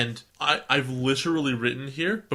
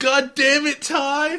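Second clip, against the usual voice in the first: very high, loud whine; 13 semitones higher, 7 dB louder than usual. Act out Matt yelling at Ty for a fellow speaker, in a whiny Matt voice. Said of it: "it's just a whiny Matt voice".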